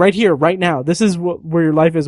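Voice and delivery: put-on yelling. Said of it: "she's, like, yelling at Ray Fiennes".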